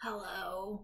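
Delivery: hushed, very quiet, husky voice. Someone finally picking up the receiver after the phone rings a long while: husky voice. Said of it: "in a kind of husky voice".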